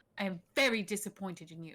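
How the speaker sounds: clipped whisper. Whispering to a character frantically trying to get away: curt whisper. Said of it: "I'm just gonna whisper very curtly".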